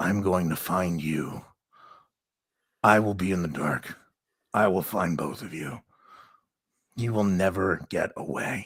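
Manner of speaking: deep, low, growling voice. Storyteller voicing a woman whose voice changes in the tank, low growl. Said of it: "voice turns into this low growl and says".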